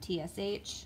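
usual speaking voice

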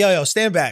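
ordinary delivery

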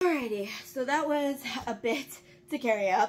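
puffing, winded, short of breath. Talking to viewers right after carrying books upstairs, out of breath. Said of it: "I'm a little bit out of breath".

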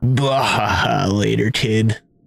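low, sultry shark character voice. Voicing the shark during a game episode, in a deep, hot shark voice. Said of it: "Do I have a deep, hot voice?".

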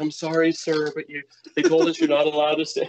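put-on courteous, polite nineteen-year-old kid voice. Speaker retells a 19-year-old telling him he can't stay, imitating a polite young kid. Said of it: "That's a good impression".

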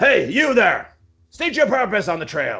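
high, shouted soldier's yell. Voicing a scout soldier challenging travelers on the trail: soldier yelling. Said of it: "one of the soldiers yells out".

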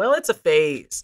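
plain

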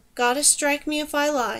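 ordinary delivery

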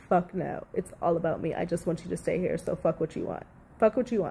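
usual speaking voice

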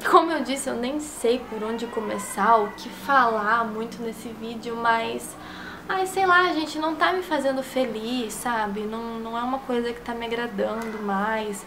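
mock-sad, fake sorrowful tone.

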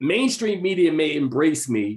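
ordinary talk, nothing marked

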